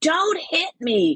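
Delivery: acted, very high screaming cry. Speaker retells a passenger on a plane screaming at a man; retelling a scream. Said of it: "she starts screaming".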